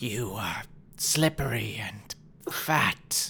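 stumbling slowly through, broken speech. Narrating a game, the speaker voices this guy mocking the player, in broken Common. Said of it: "in this really broken common".

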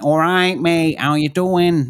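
local Manchester accent. Explaining accents, showing what a Mancunian accent sounds like. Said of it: "Man- a Mancunian accent would be a little bit more like".

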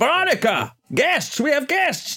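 bellowing voice, high and swooping. A storyteller voices Augustus Wayland calling Veronica about the guests, Augustus Wayland bellowing. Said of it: "he bellows".

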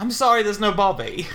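bad fake Australian accent. Asking what a woman said to the other speaker: bad australian accent. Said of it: "That's a really bad Australian".

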